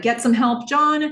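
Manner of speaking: high, loud, frantic shout. Narrating a woman's reaction as a man collapses in a restaurant, retelling a shout for help. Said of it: "She shouts back to Donna".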